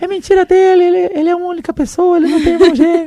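very high, shrill, acted-out shout. Retelling how a student ran out through the school: imitating a student shouting. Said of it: "Ele saiu gritando assim".

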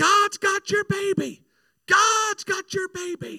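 shrill, very high, very loud, slow drawn-out scream. Retelling what a little old lady at church told her: imitating someone screaming. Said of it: "And she screamed".

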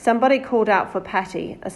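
ordinary delivery

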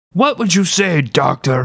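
put-on Belgian accent. Retelling what a man said to his doctor friend: belgian accent. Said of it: "Belgian accent!".

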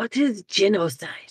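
innocent, leaning-in stage whisper. Playing a character who leans over to ask something: half-whispering. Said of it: "lean over and whisper".

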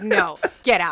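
motherly, scolding telling-off voice. Retelling how a woman ordered a man out of her office chair: imitating a mom scolding. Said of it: "she totally went mom on him".

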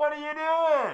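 very high, shrill, loud yell. Retelling how a man who yells constantly comes out and yells, imitating him yelling. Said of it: "He comes out and he yells".

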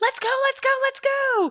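impatient, very high screaming yell. Retelling rushing the kids along, imitating own screaming. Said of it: "I'm the one screaming like".

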